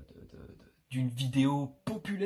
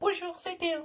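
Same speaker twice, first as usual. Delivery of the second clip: put-on very high little-kid voice, like a ten-year-old. Recalling the small voice from old videos: voice of a ten-year-old kid. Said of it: "j'avais une petite voix d'un gosse de dix ans. Voilà, genre comme ça".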